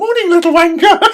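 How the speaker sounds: fond, friendly tone. Showing how they greet the dogs some mornings, insult in a sweet nice tone. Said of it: "if you say it in a nice tone".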